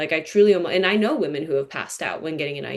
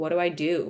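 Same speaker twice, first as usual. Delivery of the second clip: mock-crying, sobbing voice, quieter; 3 dB quieter than usual. Recalling a ceremony, the speaker acts out her past self begging: re-enacting own crying plea. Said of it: "crying, crying, and begging, like".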